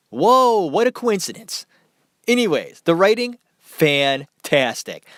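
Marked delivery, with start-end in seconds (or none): 2.8-4.9 sarcastic, ironic mock tone meaning the opposite. Reviewing a film and praising its writing: sarcastic. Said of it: "I'm being sarcastic".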